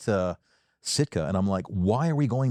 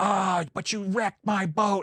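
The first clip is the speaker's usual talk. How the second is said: put-on very high, stretched-out old man shouting; 10 semitones higher than usual. Retelling an old man yelling at the radio guy: imitating an old man yelling. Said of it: "he was on the radio just yelling".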